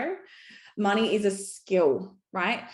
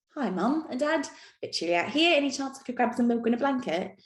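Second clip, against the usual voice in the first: put-on Cockney accent in a baby voice; 4 semitones higher than usual. Acting out a newborn baby greeting its parents: Cockney accent. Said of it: "Don't know why the baby had a Cockney accent".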